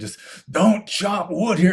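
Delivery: furious bellowing. Retelling finally losing it at a man chopping wood, retelling furious bellowing. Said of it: "I started bellowing at him".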